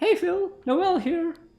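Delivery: very high, slow, unhurried voice. Greeting Phil in a put-on voice: Noel voice. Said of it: "That's my Noel voice".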